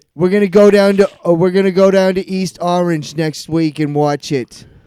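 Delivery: put-on Jersey accent. Chatting with a co-host about watching a movie: Jersey accent. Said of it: "that was my Jersey accent".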